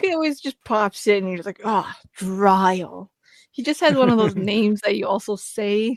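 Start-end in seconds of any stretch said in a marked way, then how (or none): 1.6-3.1 disdainful, scornful and contemptuous. Speaker shows how you say a favorite character's name, disdainful like naming an enemy. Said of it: "You just say it like it's your enemy".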